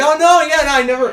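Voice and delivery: very high, loud, high-pitched yelling outburst. Retelling meeting someone, yelling into the microphone. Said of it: "I'm yelling into the microphone".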